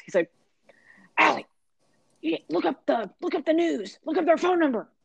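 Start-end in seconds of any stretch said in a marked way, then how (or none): 1.2-4.8 high, put-on barging-in yell. Retelling how Dad came in the door and yelled: imitating Dad yelling.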